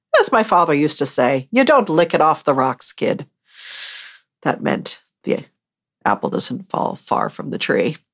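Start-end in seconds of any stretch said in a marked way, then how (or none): 1.5-3.2 really bad exaggerated fake Irish accent, sing-song. Quoting a father's old saying in a really bad irish accent. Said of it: "that is my really, really super bad Irish accent".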